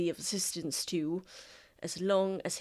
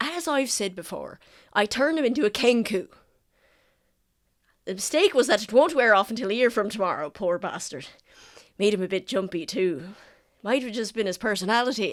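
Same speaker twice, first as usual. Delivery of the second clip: raised voice, speaking up so it carries; 3 semitones higher, 8 dB louder than usual. Voicing a character who calls after the players as they walk away, raised voice. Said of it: "he raises his voice such that you can hear him".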